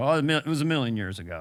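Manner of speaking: put-on reminiscing old-guy storyteller voice. Imitating how someone talked about the past: Burt Reynolds impression. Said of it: "Burt Reynolds used to also go".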